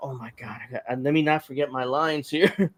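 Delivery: flustered, fumbling, stumbling, lost-for-words delivery. Mocking a wrestler who is trying to remember her lines. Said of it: "kinda like this, trying to".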